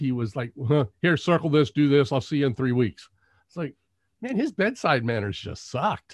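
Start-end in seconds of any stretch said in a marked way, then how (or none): none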